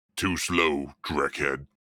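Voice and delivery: low, growling, snarling orc-like monster voice. Narrating a scene, the orc taunts the man he just stopped, growling. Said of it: "he growls through exposed tusks".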